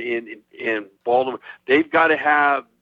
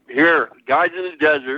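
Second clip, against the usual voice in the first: speaking through a full mouth of food; 3 semitones higher than usual. Reading out the betting line for the game, talking with mouth full. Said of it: "Sorry, I have my mouth full".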